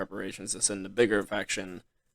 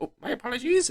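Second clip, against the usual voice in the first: shrill, very high, loud squeaking goblin voice; 5 dB louder than usual. Voicing a goblin servant who apologizes while bringing food: goblin voice. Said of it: "a goblin kind of comes in and goes".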